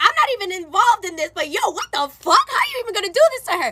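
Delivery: angry, mad, indignant, heated outburst. Retelling own reaction to a friend's cheating boyfriend: imitating own angry voice. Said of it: "now I'm getting mad".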